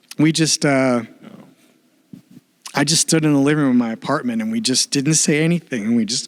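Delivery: choked up, close to tears. Recalling standing silently in the living room of the apartment, close to tears. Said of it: "I'm gonna start crying".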